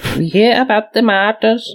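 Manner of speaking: Pennsylvania Dutch accented voice. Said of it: "I don't know how to do the accent".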